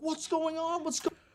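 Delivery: put-on very high, shrill scream, cut off. Retelling a friend on the phone during a shooting: imitating someone screaming. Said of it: "is screaming".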